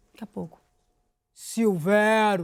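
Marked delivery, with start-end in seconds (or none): 1.3-2.4 put-on muffled mouthful voice, lower. Retelling a stranger's answer from behind a door: imitating a voice with mouth full. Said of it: "com a boca cheia".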